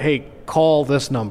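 put-on deep American Southern accent. Speaker shows how they have to say commands, in a deep american southern accent. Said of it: "I have to put my deep American Southern accent on".

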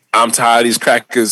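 plain

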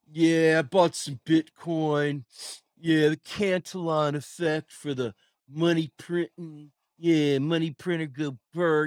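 mock smug, cocksure know-it-all conviction. Mocking people who talk about money printing: mocking cocksure conviction. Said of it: "They say it with such fucking conviction".

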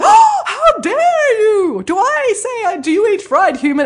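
very high, loud, drawn-out, very slow puppet voice. Retelling a puppet's reply to children at a school visit: Nanny Piggins puppet voice. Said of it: "And she's like".

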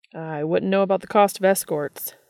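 dry, deadpan delivery. Narrating a character's reply to a man who mocked him, dry. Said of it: "Dean said dryly".

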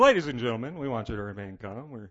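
mock-calm low voice. Retelling a pilot's intercom announcement to passengers, imitating a calm pilot. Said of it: "as calmly as he can".

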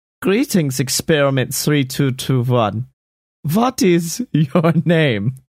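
fake German accent throughout. Acting out a villain greeting his clone: put-on german accent. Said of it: "who now has a German accent for some reason".

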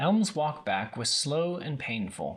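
plain

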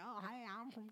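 fake Southern US accent. Showing what a requested southern accent would sound like: put-on southern accent. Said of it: ""Do a southern accent,"".

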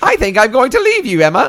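shrill, loud, swooping fake British cartoon voice. Playing a British character leaving Emma: Terrence and Phillip British voice. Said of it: "my British people sound like Terrence and Phillip".

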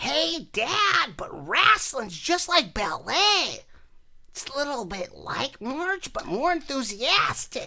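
high, swooping animated cartoon-character voice. Showing how one voice shifts into another: Bobby from King of the Hill voice. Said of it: "Bobby from King of the Hill".

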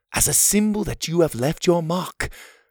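ordinary delivery

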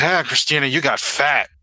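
put-on boozy, very drunk man's voice. Voicing a drunk man at the door who greets Christina: drunk voice. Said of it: "he's really drunk".

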